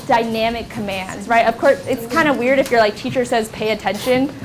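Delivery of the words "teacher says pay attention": ordinary talk, nothing marked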